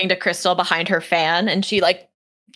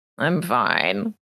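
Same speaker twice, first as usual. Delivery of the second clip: half-asleep, sleepy, drowsy, insistent voice; 5 semitones lower, 4 dB quieter than usual. Voicing a sleepy character who insists he is fine: sleepy character voice. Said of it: "He's sleepy".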